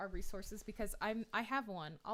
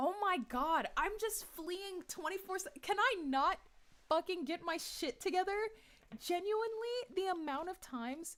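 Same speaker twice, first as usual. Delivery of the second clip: very high, loud, ranting yell; 9 semitones higher, 4 dB louder than usual. Player reacting to a tabletop game prompt asking where to flee: yelling. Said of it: "Sorry, I'm I'm like yelling".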